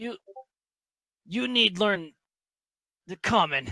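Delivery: very high, broken-up, halting slurred words. Retelling a late night with a girl who starts slurring: imitating a girl slurring her words. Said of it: "she starts kind of like slurring her words".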